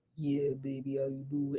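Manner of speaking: very low, very soft, seductive kitten voice. Describing having to make her voice sexy to seal the deal: put-on sexy voice. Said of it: "I gotta make my voice sexy".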